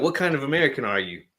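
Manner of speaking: put-on thickest Southern US accent, pitched high. Retelling a movie scene, quoting a man holding a gun: strongest Southern US accent. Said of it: "the most southern accent you can hear".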